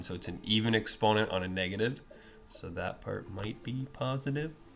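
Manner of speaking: very quiet, hushed half-whisper. Explaining a math problem to viewers, half-whispering so as not to give away too much. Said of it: "I'm whispering that".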